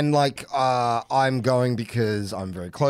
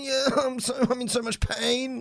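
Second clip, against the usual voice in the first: exaggerated, overplayed fake agony, pitched way up; 11 semitones higher, 4 dB quieter than usual. Mocking the overplayed way of calling in sick: mock overplayed pain. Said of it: "So I'm not doing that whole".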